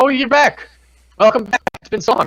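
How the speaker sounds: very high, squeaky voice. Voicing Harshnag greeting the party back: Harshnag voice. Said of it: "He stands and goes".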